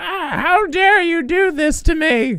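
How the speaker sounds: put-on old woman voice, very high, slow, accented. Showing the voice used when playing the mom, older mom voice. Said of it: "that's the mom voice I have to do because I have to make her older".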